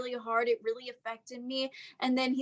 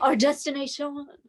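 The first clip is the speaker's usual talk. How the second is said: put-on French accent; 3 semitones higher, 4 dB louder than usual. Podcast host closing an episode, announcing the destination in a french accent. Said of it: "with the French accent".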